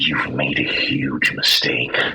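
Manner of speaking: low, menacing whisper. Voicing a character who whispers to a creature before shooting: whispering a threat. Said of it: "I whisper into the barrel of the gun".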